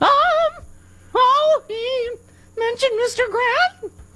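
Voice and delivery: high, slow register.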